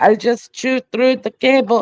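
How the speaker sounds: clumsy put-on Israeli accent, high and loud. Voicing a rat or admin who chewed the cable: bad Israeli accent attempt. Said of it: "I can't do it like a Israeli accent".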